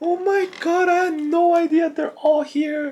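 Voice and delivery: play-acted very high, very slow, drawn-out sobbing wail. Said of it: "That's when you started pouring".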